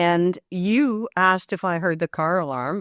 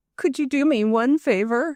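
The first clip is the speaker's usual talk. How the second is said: mock pitiful tone, higher pitch; 7 semitones higher than usual. Retelling a guest's morning request for a favor: imitating a sad Dickensian voice. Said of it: "in this saddest, terrible Dickensian voice".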